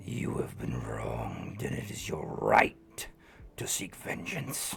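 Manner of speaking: eerie, whispered demon voice. Voicing a demon whispering in the back of someone's mind: whispering voice in your head. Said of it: "whisper in the back of your mind".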